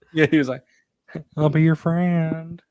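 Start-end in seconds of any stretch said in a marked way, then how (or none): 1.4-2.5 put-on male voice, frog-like Southern accent. Retelling what a man said, in a Kermit the Frog southern voice. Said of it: "It sounds like Kermit the Frog trying to be like a southern male".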